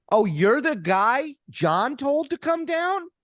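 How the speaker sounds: acted, very loud, high, rising shout. Retelling his answer to a man warning him about his podcast, very loud. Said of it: "And as loudly as possible".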